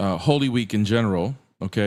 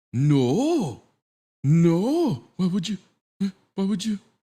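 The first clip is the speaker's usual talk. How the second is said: mocking voice, higher; 11 semitones higher than usual. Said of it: "And you're like".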